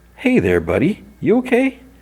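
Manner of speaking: very high, swooping, friendly put-on voice. Retelling a scene where the free guy greets the tied-up guy, imitating a friendly voice. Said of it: "the free guy says in a friendly voice".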